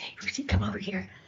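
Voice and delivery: soft, hushed whisper. Retelling how a grandpa called a child over: imitating grandpa's whisper. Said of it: "he whispered and he said".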